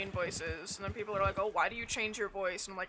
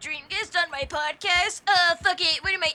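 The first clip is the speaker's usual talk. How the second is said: very high, loud, squealing put-on voice; 9 semitones higher, 11 dB louder than usual. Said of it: "I call it my [name] voice".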